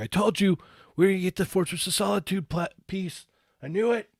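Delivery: high-pitched, excited, gloating tone. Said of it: "I was excited 'cause I was like".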